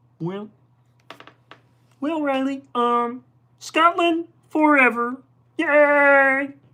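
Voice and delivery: high-pitched slow delivery, yay stretched out. Doing a requested shout-out line in a Kermit voice: Kermit the Frog voice. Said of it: "I will attempt my best Kermit".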